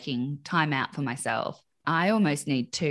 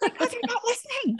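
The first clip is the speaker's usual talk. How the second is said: very high, exasperated yelling. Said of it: "And I'm like".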